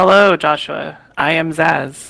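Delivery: slow, mechanical robot voice. Zaz, asked to say hi to joshua, greets him in a robot-like voice. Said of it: "I sounded like a robot saying it like that".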